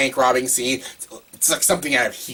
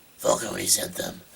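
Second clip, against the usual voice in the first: put-on voice, slightly deep, soft and rough; 5 semitones lower, 7 dB quieter than usual. Showing how he talks in Batman Begins, Batman voice, a little deep. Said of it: "it's a little deep, but it's not annoying".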